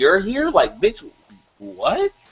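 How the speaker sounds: mock stunned, swooping, drawn-out disbelief. Retelling how a character reacted on seeing someone: imitating a shocked reaction. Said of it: "he was shocked".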